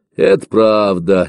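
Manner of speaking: condescending, patronizing tone. The young guard escorting Efimka agrees with him; condescending agreement. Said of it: "снисходительно согласился парень".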